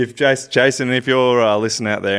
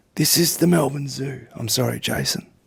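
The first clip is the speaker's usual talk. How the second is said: creaky nature-documentary narrator voice; 4 dB quieter than usual. In an acted scene, Jason has come to the zoo expecting a doctor: David Attenborough voice. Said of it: "You're David Attenborough".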